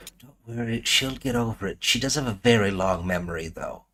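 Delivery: hushed, soft, confiding half-whisper. Leaning down to a child in the game and half-whispering: half-whispering in character. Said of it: "I lean down and whisper into the child's ear".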